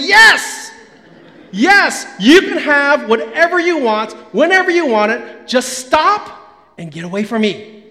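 mock fed-up, exasperated, resigned giving in. Retelling a parent finally giving in to begging kids: imitating an exasperated parent giving in. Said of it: "until you reach that point and you say".

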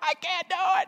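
very high, panicked, freaking-out squeal.

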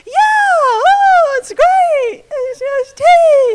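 very high, very slow voice, oh stretched. Retelling own reply about someone's teeth: imitating own high-pitched voice. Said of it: "my voice gets really high".

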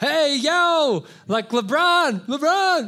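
very high, loud, very drawn-out shout. Acting out a fan trying to get an athlete's attention: imitating a fan shouting. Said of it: "shouting out to 'em, trying to get their attention".

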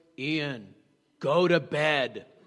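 rock-bottom deepest voice, very slow and drawn out. Retelling a child's answer about what god said: deepest voice. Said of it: "said in the deepest voice".

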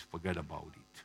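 terrible fake Italian gangster accent, low and soft. Speaker quoting a film line, mimicking Hugh Grant's terrible Italian accent. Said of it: "in terrible Italian accent".

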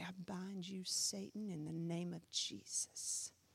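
low, slow mutter under the breath. Retelling a quiet line once said under the breath at a cursing boss: imitating muttering under breath. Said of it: "under my breath".

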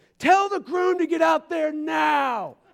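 mock very high-pitched shrill yell, drawn out. Retelling the church's wedding coordinator ordering the groom out, imitating someone yelling. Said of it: "she's yelling".

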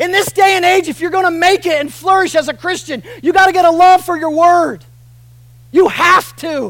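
loud, high-pitched, urgent and earnest pleading. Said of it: "That's me pleading to you".

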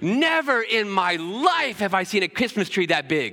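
high, thrilled, overjoyed, excited screaming. Retell what she said seconds after Remy's view came into it, imitating someone screaming. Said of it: "we heard her start screaming".

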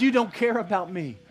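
mock-bitter, acted bitterness. The speaker retells a sister's words to Jesus, as a mock-bitter complaint. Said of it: "She's bitter".

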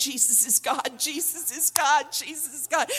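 full-voice yell. Speaker retells a man running up and down a dirt road, retelling a yell at full voice. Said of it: "He was yelling at the top of his voice".

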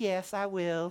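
a little southern lilt. Retelling how she answers the morning apology, in a slight southern accent. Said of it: "In a little southern accent".

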